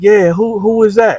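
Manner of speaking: put-on boyish, childlike way of talking. Retelling a talk through a cell door: imitating Virgil's soft childlike voice. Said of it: "That's how Virgil talked".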